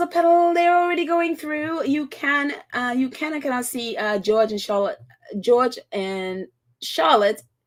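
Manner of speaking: normal talking voice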